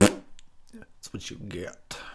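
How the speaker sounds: drawn-out, very slow, scornful, contemptuous delivery. Playing a sheriff character in a movie: mock contempt. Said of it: "Look at him with contempt".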